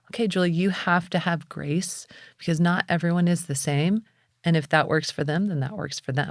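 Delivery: ordinary talk, nothing marked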